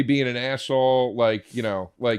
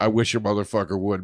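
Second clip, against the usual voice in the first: ordinary delivery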